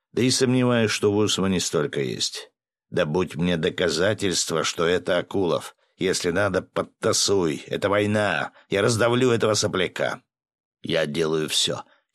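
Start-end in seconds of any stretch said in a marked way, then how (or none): none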